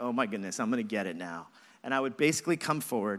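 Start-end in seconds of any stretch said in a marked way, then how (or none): 0.0-1.5 put-on sheepish, caught-out tone. Imagining coming home to a father who calls, acting out a sheepish reply. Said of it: "sheepishly be like".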